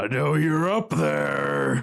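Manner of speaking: groaning creature voice, words drawn out. Narrating a game scene, voicing an unseen thing calling up to the players, groaning loudly. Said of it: "It groans louder and says".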